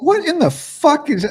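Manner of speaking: put-on very high, furious, pissed-off exclamation. Retelling a reaction to a video's audio going silent: imitating own angry outburst. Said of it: "I'm getting pissed off at my phone".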